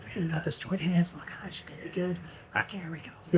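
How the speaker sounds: very quiet, hushed whisper. Retelling a wedding moment, acting out the couple: imitating a couple whispering. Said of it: "they kinda whispering".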